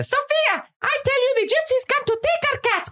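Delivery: very high-pitched, shrill yell. Retelling a first visit when a friend's mom opened the door, imitating Daphne yelling. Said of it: "starts yelling at Sophia".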